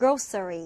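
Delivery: grocery with GRO stressed, low falling tune.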